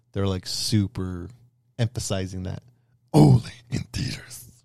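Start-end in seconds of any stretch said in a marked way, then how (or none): 3.2-4.5 cartoonish baddie voice. Quoting the latest ads, in an Inspector Gadget villain voice. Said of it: "I don't know why I did that voice".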